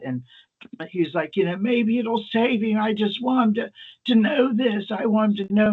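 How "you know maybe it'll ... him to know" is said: mock weepy drunk, high, tearful, near crying. Retelling a drunk patient's plea to tell the doctor: imitating a drunk man crying. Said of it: "And he starts, like, crying".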